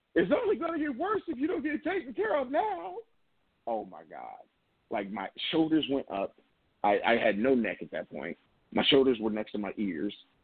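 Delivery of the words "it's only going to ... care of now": acted, raised, shrill, very high-pitched call. Retelling a woman calling across the reception area: retelling a raised voice. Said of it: "raises her voice and says".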